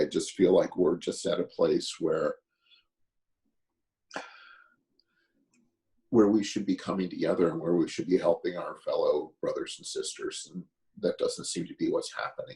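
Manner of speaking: close to crying, pushing through. Speaking right after apologizing for being about to cry, near tears. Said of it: "I'm sorry, I'm about to cry".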